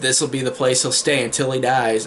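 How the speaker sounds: ordinary delivery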